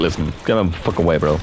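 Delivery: ordinary talk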